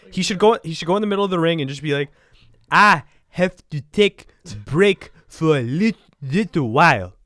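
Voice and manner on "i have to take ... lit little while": raised, loud, slow, measured, careful, deliberate voice. Imitating how Shinsuke Nakamura would announce a break in the ring: imitating Shinsuke Nakamura. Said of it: "doing the Shinsuke hands".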